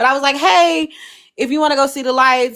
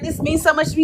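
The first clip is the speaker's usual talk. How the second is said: put-on, high, over-the-moon excited gushing voice; 5 semitones higher than usual. Retelling his thanks for a dropped-off gift: imitating someone excited. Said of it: "he was so excited".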